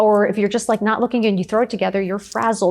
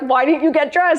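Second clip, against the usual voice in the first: screaming, pitched higher; 6 semitones higher than usual. Retelling a follower's message about hearing a voice, imitating someone screaming. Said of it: "Caroline screaming".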